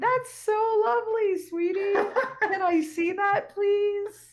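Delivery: very high, very slow, drawn-out voice. Voicing a mom speaking to her child: acting out a mom's voice. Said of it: "And their moms are like".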